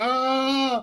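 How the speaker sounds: very high dazed cry. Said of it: "I was like".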